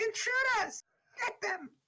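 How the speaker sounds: very high, alarmed giant's shout. A female hill giant looks out a smashed door at intruders, hill giant shouting. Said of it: "a hill giant female look out and shout".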